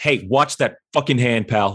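increasingly undiplomatic tone. Being hoisted about, the character tells someone off, getting less and less diplomatic. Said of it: "getting less and less diplomatic".

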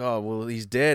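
usual speaking voice

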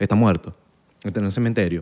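play-acted icy, cold, matter-of-fact, low delivery. Retelling answering people who ask about their father, said coldly. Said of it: "y yo digo así fríamente".

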